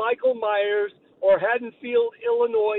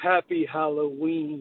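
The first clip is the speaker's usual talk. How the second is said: mock eerie, sinister, creepy, unsettling tone; 7 semitones lower, 4 dB quieter than usual. Retelling a movie scene where a doctor says the line: creepy delivery, imitating a character. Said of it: "And he says it just like that".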